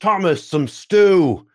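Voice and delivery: calling out loudly. Playing the man serving the tankard, calling for stew, shouting to the back. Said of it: "he sort of shouts to the back".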